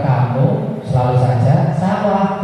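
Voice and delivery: slow, deliberate, spelled-out scolding tone.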